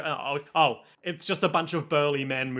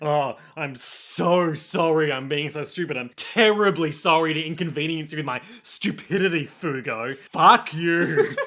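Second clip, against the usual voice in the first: put-on heavy sarcasm, louder; 4 dB louder than usual. Reacting to a foreign-language scene, acting out a character's line with heavy sarcasm. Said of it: "he's so sarcastic in this next line".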